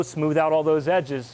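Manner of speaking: nice and slow, smooth, unhurried delivery. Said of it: "nice and slow".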